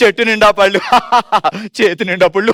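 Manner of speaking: speaking through laughter. Showing a partner how to say a tongue twister laughing, laughing while talking. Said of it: "ఇప్పుడు నవ్వుతూ చెప్పిదిగో ఎలా చెప్తే తెలుసా".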